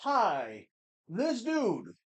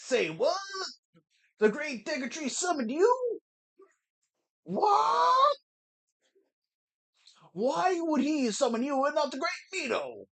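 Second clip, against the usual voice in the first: put-on high, poorly done Southern accent. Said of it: "Really bad, stereotypical Southern accent".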